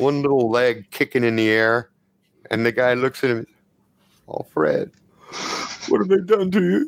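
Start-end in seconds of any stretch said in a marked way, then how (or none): 4.3-6.9 tearful, pitched-up lament on the verge of tears. Voicing a character finding a broken little robot: about to cry, in character. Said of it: "The guy's gonna cry".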